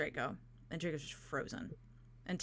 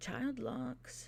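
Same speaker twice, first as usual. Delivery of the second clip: muttered, hushed, growling aside under the breath; 7 semitones higher, 5 dB quieter than usual. Narrating a game scene, voicing a character who growls at another: growled under breath. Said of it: "under his breath, he kind of growls out".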